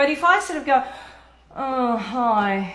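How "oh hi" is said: unenthusiastic, low-energy, lower pitch. Showing a greeting that makes no one want to talk: low-energy greeting. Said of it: "you're not really gonna want to talk to me".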